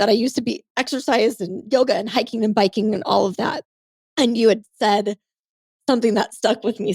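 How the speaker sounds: tearful, crying voice, speaking through tears. Speaker telling the other person something they said that stuck, crying. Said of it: "Sorry, I'm crying".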